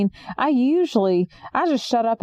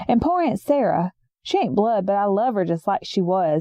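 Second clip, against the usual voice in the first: ordinary delivery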